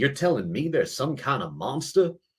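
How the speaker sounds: put-on just a hint of a Southern accent. Retelling an actor's line from the shoot day, slight Southern accent. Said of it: "a little bit of a Southern accent".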